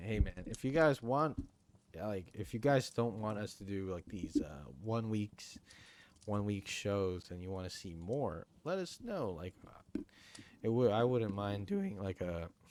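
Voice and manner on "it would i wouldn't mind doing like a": voice breaking, cracking on a word mid-phrase. A host asks viewers for feedback on shorter weekly shows, voice cracking. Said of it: "that voice crack".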